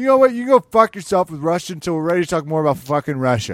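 blunt, brash, loud, barked-out delivery. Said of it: "that's how Dana handled it".

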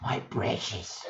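famous fantasy cave creature voice. Talking about the one voice every voice actor can do, in a Gollum voice. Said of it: "It's Gollum".

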